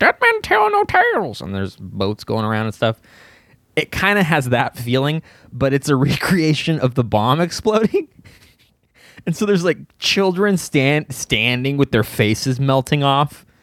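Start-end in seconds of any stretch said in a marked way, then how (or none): 0.0-1.4 very high animatronic parrot squawk. Describing a ride and mimicking its animatronic parrot, Pirates of the Caribbean parrot squawk. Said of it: "a little animatronic parrot squawking at you and going like".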